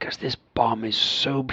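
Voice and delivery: put-on English accent. Acting out a bomb expert talking to the FBI: English accent. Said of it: "he's got an English accent, too".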